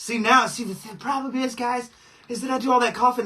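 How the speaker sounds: short of breath, catching air, winded. Talking to the guys at high altitude after coughing, out of breath. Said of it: "then I'm out of breath".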